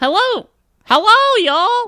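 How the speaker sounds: very high, loud, cheery cartoon voice, belted out. Talking about Miss Minutes impersonations, showing how you did it: Miss Minutes impression. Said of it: "was my Miss Minutes".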